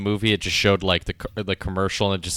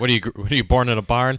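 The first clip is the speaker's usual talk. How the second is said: mock angry yell, higher and louder; 4 semitones higher, 5 dB louder than usual. Acting out the dad yelling about the open gate: imitating a dad yelling. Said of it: "Jack's dad had yelled at him".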